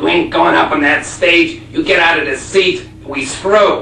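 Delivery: slow, gruff voice.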